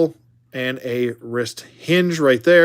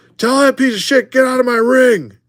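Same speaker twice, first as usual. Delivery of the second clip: very high, furious, angry yell; 11 semitones higher, 4 dB louder than usual. Posing the figure as if yelling at a wrestler: acted angry yell. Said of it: "yelling at Brett".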